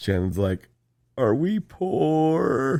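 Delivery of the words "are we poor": tearful, very high sobbing voice. Recounting what Shannon said during a recorded video, imitating Shannon crying. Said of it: "And she's like crying".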